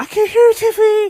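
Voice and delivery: squeaking, very high-pitched. Retelling how Charlotte's voice squeaked during a heated exchange, imitating Charlotte's squeaky voice. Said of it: "Charlotte started squeaking her voice like".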